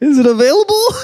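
puppet voice, pitched way up. Asking whether a website domain is available, in a church puppet voice. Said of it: "Why'd you say that like a church puppet?".

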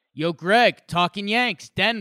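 put-on loud hollered yell. Retelling yelling at a player from the stands: imitating own yell. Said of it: "me yelling at him".

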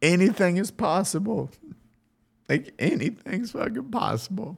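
tearful, very high-pitched crying voice. Encouraging everyone before thanking them and apologizing for the tears, crying. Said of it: "I'm sorry I'm crying right now".

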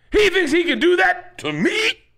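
very high, wildly swinging, swooping outburst. Repeating lines from a Training Day clip: Denzel Washington impression. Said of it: "This is my impression of Denzel".

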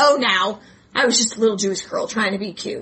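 ordinary talk, nothing marked

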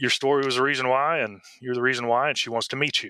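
ordinary talk

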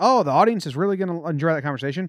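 ordinary talk

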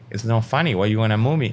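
ordinary talk

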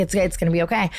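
ordinary delivery

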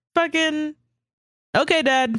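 high, humoring tone. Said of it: "just start treating him like he's senile".

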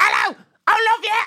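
put-on British accent, very high pitched. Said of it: "speaking a British dialect".

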